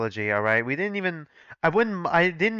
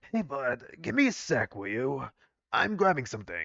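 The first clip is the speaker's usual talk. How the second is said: put-on soft, quiet elderly man character voice; 5 dB quieter than usual. Speaker trying the voice given to Sir Ray again: Sir Ray's old man voice. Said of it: "the old man voice".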